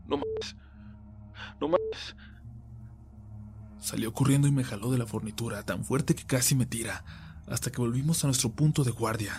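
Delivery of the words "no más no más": halting, panic-filled, very slow, very drawn out. Narrating how his companion peeked out, the reader voices his exclamation: panicked broken voice. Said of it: "exclamó con voz entrecortada y llena de pánico".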